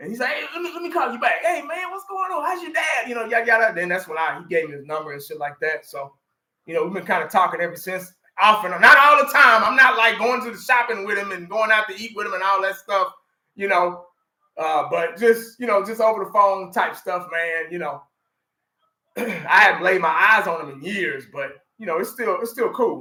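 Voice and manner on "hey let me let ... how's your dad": high, raspy chattering voice. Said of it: "that raspy ass voice".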